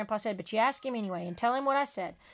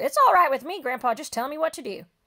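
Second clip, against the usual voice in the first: sudden, loud, eager blurted outburst; 4 semitones higher, 7 dB louder than usual. Reading a story aloud, the boy agreeing to the contest: blurting it out. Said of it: "I reared back and blurted".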